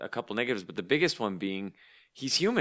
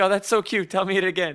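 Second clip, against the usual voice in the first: voice pitched up and projected; 8 semitones higher, 5 dB louder than usual. Imagining Uncle Leo's reply to the droid: Uncle Leo voice. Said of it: "He'd be like".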